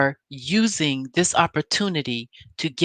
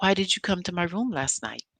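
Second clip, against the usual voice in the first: put-on calm voice, much quieter; 2 semitones higher, 6 dB quieter than usual. Recounting how she asked Martell again while filming, retelling a calm question. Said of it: "in a calm voice".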